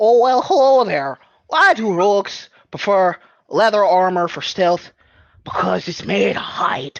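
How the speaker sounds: loud, thick, put-on Canadian accent. Told during a game to say a joke in a Canadian accent, the player delivers it in thick Canadian accent. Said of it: "you are going to say this in a Canadian accent".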